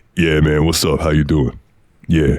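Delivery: super deep, easy, relaxed low voice. Show how he sounds when you talk to him, in Maurice's super deep voice. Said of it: "He's got a super deep voice".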